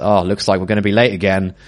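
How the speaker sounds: ordinary talk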